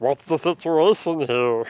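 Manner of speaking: loud high character voice. Voicing the gentleman Illithid as he joins the meeting: Zoidberg voice. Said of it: "I was expecting him to sound like Zoidberg".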